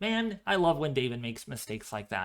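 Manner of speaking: usual speaking voice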